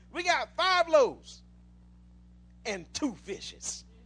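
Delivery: slow, sarcastic delivery with attitude. Acting out Peter's line while teaching scripture, put-on attitude as Peter. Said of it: "said it with an attitude".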